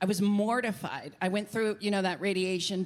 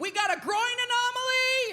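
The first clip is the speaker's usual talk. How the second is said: put-on shrill, very high-pitched alarmed screaming. Retelling a TSA agent's reaction after his body scan, imitating the agent screaming. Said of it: "the T S A agent just starts screaming".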